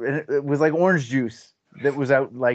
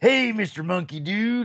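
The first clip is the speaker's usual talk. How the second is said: put-on cartoon voice, pitched higher; 8 semitones higher than usual. Showing the voice used for a wolf in a kids cartoon: Mister Wolf cartoon voice. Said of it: "the voice that I did for that was very similar to Ripper".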